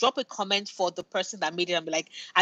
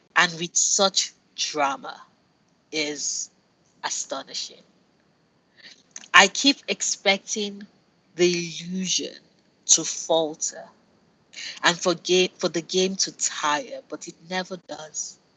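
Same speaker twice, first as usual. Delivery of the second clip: mock savoring, relishing delivery; 3 semitones lower than usual. Reading a Dragon Age: The Veil Guard review aloud, in a mock savoring review voice. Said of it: "my Noria is savoring this review voice".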